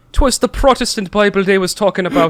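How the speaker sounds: bad put-on Irish accent. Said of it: "in this horrendous Irish accent".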